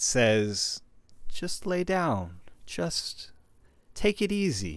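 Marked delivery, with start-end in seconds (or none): 1.3-4.8 very high, slow, swooping, enticing, alluring lilt. As game master, voicing the voice in Eric's head: alluring voice. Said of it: "you hear an alluring voice within your head".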